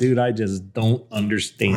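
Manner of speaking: ordinary delivery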